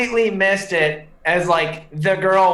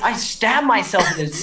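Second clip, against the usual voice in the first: plain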